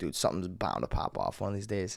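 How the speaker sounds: ordinary talk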